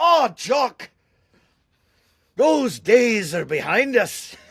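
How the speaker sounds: put-on mixed Irish and Scottish accent. Retelling how he asked Robert about having children, quoting his reply in Robert's Irish-Scots accent. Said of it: "he has a bit of a Irish Scot accent".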